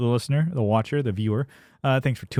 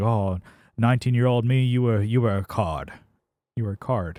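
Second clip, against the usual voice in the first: imitated British accent. Imitating how British people sound smart: imitating a British accent. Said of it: "it's just the accent and how they say it's like".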